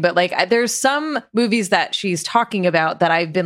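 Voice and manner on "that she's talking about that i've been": ordinary talk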